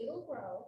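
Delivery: ordinary delivery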